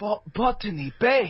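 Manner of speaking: high, worried voice. Asked for an impression, imitating Chekov finding the ship. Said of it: "can you do an impression of him".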